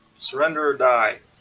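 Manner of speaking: booming, very loud yelling. Voicing a character in a fight calling for surrender: yelling a threat. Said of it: "yell out".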